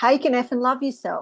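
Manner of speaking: quick, hurried, rattled-off fast delivery. A speaker repeats their own phrase, this time said fast. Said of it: "say it fast".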